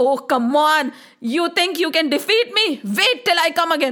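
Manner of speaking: ordinary delivery, nothing marked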